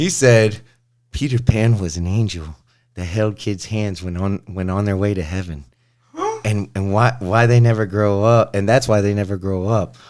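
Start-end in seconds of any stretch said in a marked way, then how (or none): 1.1-10.0 eerie, unsettling, creepy put-on storyteller voice. Retelling what someone said, quoting it in a creepy voice. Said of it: "I'm going to say it in my creepy voice".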